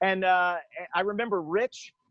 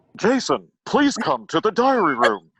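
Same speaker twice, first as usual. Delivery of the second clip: loud, slow, swooping announcer voice; 7 dB louder than usual. Showing what is heard on entering the diary room: Don Woolman impression. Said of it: "let me try an impression here".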